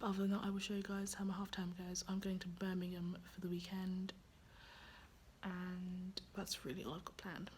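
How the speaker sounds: soft unvoiced whisper.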